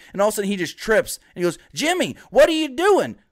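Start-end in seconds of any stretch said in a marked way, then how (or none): 1.8-3.1 put-on Southern accent, pitched higher. Acting out R-Truth at a SmackDown talking to Lil Jimmy: Southern accent impression of R-Truth. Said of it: "why is he so Southern to you?".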